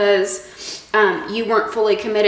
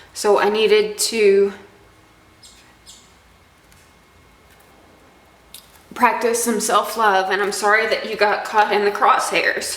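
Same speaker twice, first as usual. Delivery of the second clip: tearful voice, crying while talking. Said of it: "I'm crying again".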